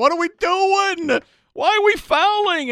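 shrill, very high, loud, all-out screaming. Retelling watching a last-second foul from the loge: retelling a scream at full volume. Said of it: "I'm screaming at the top of my lungs".

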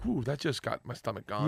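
ordinary delivery

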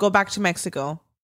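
plain

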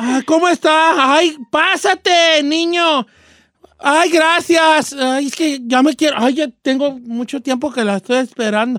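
swishy, camp, effeminate voice.

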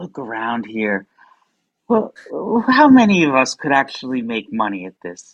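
downcast, gloomy, depressed, deadly serious tone. Retelling what a comedian friend once said, imitating Gil's depressed tone. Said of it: "he said in this very depressed sort of way".

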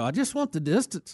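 put-on rough, clumsy Irish accent. Retelling a golfer mad at his caddy: bad Irish accent. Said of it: "I can't do a good Irish accent".

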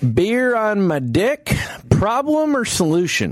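put-on southern accent, very slow, high drawl. Reading out a user's question, voicing the asker: put-on Southern accent. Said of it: "notice I gave him a southern accent".

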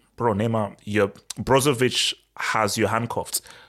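ordinary talk, nothing marked

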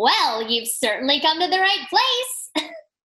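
loud, swooping, sing-song cartoon voice. Asked to do the voice they played for listeners, answering in Dima character voice. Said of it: "We got the Dima voice".

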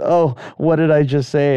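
normal talking voice

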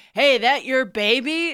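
very slow drawn-out call. Retelling how a grandfather first spoke to a grandmother: imitating grandfather catcalling. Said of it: "my grandfather tailgated her, pulled up to her, and was like".

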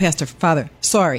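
normal talking voice

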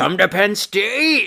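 high, slow raspy voice, dragged out and rising at the end.

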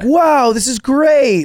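fake bad child-actor voice, very high, very slow. Recalling acting grateful for gifts every Christmas, fake shitty child-actor delivery. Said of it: "I sound like a fucking shitty child actor".

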